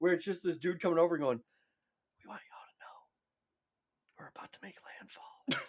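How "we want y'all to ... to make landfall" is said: mock whispered, slow, breathy, sultry and menacing. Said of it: "a war threat or a sex hotline".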